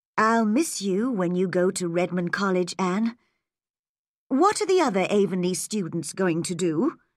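ordinary delivery, nothing marked

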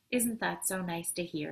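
ordinary delivery

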